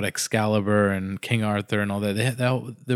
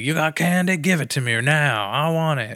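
put-on high, pitched-up, obnoxious, annoying bratty boy voice; 6 semitones higher, 3 dB louder than usual. Describing a boy from the story: obnoxious Billy voice. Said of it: "an annoying, obnoxious".

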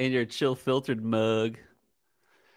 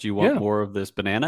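usual speaking voice

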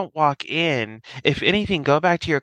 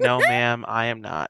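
mock exasperated tone, lower pitch; 5 semitones lower than usual. Retelling an officer's reply to a suspect: imitating someone fed up. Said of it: "Stewart was so fucking over it".

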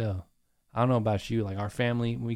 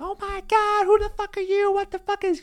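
put-on shrill, very high shrieking outburst; 5 dB louder than usual. Telling how a lady came downstairs and found a man drinking, retelling a lady screaming. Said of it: "starts screaming, like".

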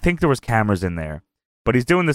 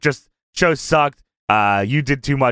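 ordinary talk, nothing marked

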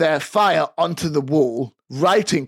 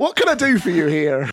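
put-on West Country accent, put on. Voicing a bartender answering a customer's order; West Country accent. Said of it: "they're from the West Country".

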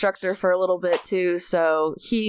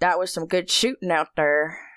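put-on old man voice. Describing leaving the shooting range, quoting a stranger's compliment in an old dude's voice. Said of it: "That's always that voice".

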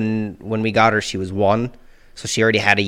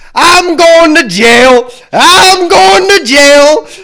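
shrill, very high, booming, slow, drawn-out yell; 14 dB louder than usual. Retelling a man walking past with a box: imitating a man yelling. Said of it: "and he's just yelling".

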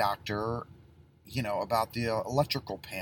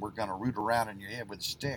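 put-on folksy good old Southern drawl. Retelling a comedy bit about a brain surgeon: good old southern accent. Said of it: "that good old Southern accent saying".

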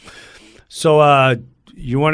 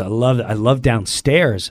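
ordinary talk, nothing marked

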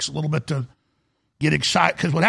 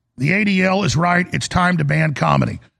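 ordinary talk

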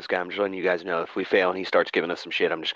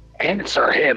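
raised, loud, high, forceful voice; 8 semitones higher, 5 dB louder than usual. Narrator voicing Moros getting close to a hesitant character, Moros raised voice. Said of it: "Moros is going to raise his voice".

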